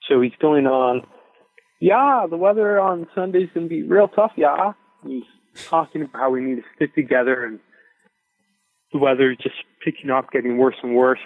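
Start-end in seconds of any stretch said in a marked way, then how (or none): 1.8-4.7 put-on heavy German accent laid on thick, pitched up. Retelling the event host's speech to the group, imitating Yuri's thick German accent. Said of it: "He's got this thick German accent".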